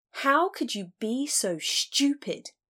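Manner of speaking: curt, high-pitched, sharply snapped retort. Tanis confronts Lucky in bed after he vanished with a stranger, snapping. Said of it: "she snapped".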